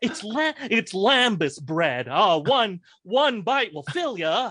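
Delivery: put-on campy comic voice. Acting out a scene as Paul Lynde: Paul Lynde impression. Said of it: "Paul Lynde is like".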